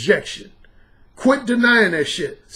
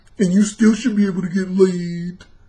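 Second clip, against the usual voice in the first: dorky, nerdy put-on voice; 4 semitones lower than usual. Speaker showing how someone could talk, dorky voice. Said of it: "talk with a dorky voice like this".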